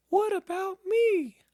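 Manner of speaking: squeaky, very high and loud. Narrator reading Piglet's question while the writer works on the book: Piglet's squeaky voice. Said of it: "said in his squeaky voice".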